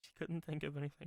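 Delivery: very soft under-the-breath murmur. Narrating Alan's remark after she shakes her head, muttered under breath. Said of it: "Under his breath".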